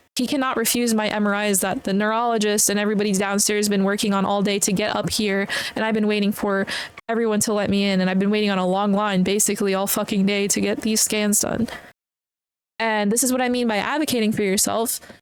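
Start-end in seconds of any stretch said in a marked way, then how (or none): none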